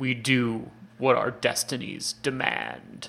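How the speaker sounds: put-on deep, gravelly voice. Recapping a He-Man episode, quoting Daimar's line, Daimar's gravelly deep voice. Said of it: "in this like gravelly deep voice says".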